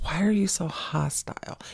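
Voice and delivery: play-acted hushed, breathy, overly calm whisper. Speaker mimicking the other person's reply to being told off, mimicking a calm voice. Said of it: "whenever you say it in that calm voice".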